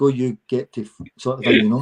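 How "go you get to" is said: imitated Swedish accent. Retelling a teammate's reply after losing at pool: imitating Henrik's Swedish accent. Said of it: "I heard it in Swedish coming back".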